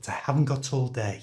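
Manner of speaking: pitch falls on the word day. Showing that pitch goes down at the end of a statement: falling pitch on day. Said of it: "my pitch goes down".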